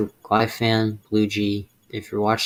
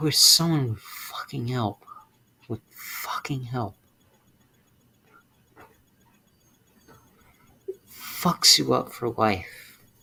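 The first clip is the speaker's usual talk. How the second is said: close to crying, higher; 3 semitones higher than usual. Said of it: "I just wanna cry right now".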